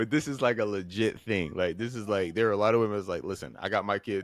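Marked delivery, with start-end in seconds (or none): none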